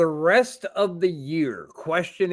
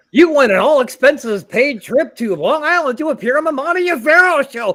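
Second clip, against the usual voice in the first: very loud, pitched-up, zany radio host voice; 8 semitones higher, 9 dB louder than usual. Co-hosts agree to try a bit together, in a wacky DJ voice. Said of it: "should we do like a wacky D J voice?".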